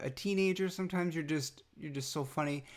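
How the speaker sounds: usual speaking voice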